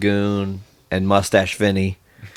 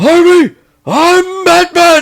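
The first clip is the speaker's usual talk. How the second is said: very high, loud, top-of-lungs scream; 7 dB louder than usual. Recounting a 90s movie scene where he screams next to Chase Meridian, retelling a scream. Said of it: "he's screaming at the top of his lungs".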